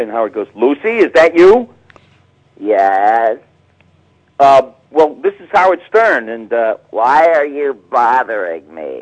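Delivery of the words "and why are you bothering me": put-on cranky voice, louder and slower. In a phone bit, answering a caller as Lucy, mock-cranky. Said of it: "like she's all cranky".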